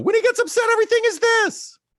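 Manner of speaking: loud, shrill, very high falsetto. Imitating an upset brother: falsetto imitating brother. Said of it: "Gabe has a great falsetto".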